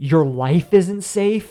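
heated outburst.

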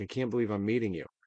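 mock crying, tearful voice. Retelling a fan who breaks down crying at a photo: imitating a crying fan. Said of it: "she just breaks down crying. She's like".

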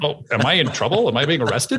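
plain

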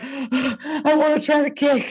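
mock out-of-breath delivery. Imitating a contestant who is badly out of breath: imitating someone out of breath. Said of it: "He is fucking sucking wind".

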